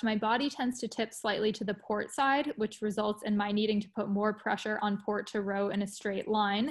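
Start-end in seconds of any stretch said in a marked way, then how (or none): none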